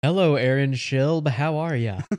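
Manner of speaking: put-on announcer-style radio host voice. Podcast guest greets the host, imitating Aaron Schilb's radio voice. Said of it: "Are you making fun of my radio voice?".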